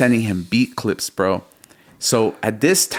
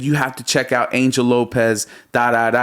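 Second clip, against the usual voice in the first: usual speaking voice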